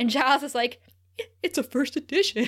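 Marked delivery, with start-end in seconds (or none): 1.4-2.5 sad, crestfallen, downcast and dismayed delivery. Retelling a TV scene where a character complains: imitating sad Giles. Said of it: "he's so sad".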